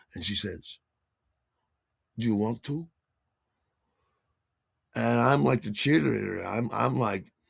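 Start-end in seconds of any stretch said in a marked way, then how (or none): 2.1-2.8 put-on, very earnest and sincere tone. Retelling a question asked while looking straight at the listener: imitating someone asking earnestly. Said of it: "very earnestly".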